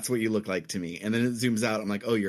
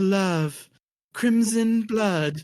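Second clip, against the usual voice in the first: very high, loud orgasmic moan; 10 semitones higher, 6 dB louder than usual. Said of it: "in a very orgasmic voice".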